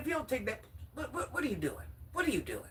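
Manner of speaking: put-on, stern, scolding father voice. Retelling dad checking her for wearing gloves: imitating dad scolding. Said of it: "He said".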